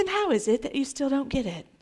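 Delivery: very quiet, soft English accent. A speaker shows how Jesus did not say it, in an English accent. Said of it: "he didn't say it in an English accent".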